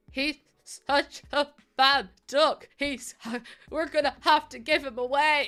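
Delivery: sobbing, crying it out between sobs. Recalling every night with a bad puppy, imitating own past sobbing. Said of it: "me sobbing my eyes out".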